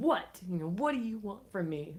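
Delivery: all-out shrill, high screaming. Retelling screaming while driving on the freeway: retelling own past screaming. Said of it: "And I was screaming".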